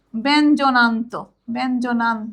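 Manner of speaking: ব্যঞ্জনান্ত pronounced slowly.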